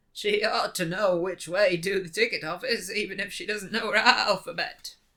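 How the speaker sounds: loud put-on goat character voice. Narrator reads the goat's line in the railway carriage, in a goat voice. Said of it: "It's a pretty good goat voice".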